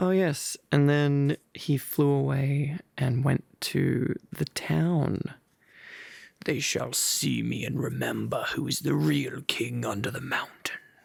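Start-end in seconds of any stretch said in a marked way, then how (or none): 6.4-10.8 grumbly, rough, growling dragon voice. Reading a chapter aloud, the speaker voices the dragon's line: grumbly Smaug voice. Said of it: "it sounds perfect for Smaug".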